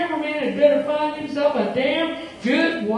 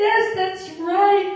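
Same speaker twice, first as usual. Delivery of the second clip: bewildered, dazed cry, caught off guard; 4 semitones higher than usual. Narrating a story, a character confirms another's guess, dazed exclamation. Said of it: "Jamie cried in a dazed voice".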